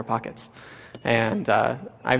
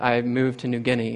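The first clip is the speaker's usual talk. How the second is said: normal talking voice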